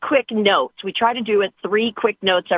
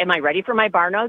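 ordinary talk

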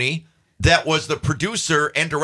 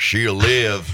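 put-on Southern American accent; 7 semitones lower than usual. Repeating the speaker's first line in the film, southern accent. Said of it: "And I had to do a southern accent".

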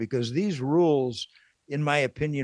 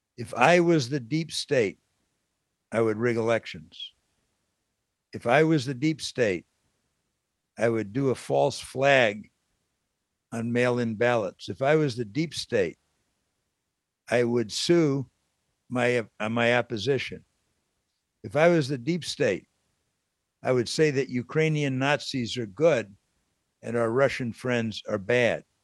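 normal talking voice

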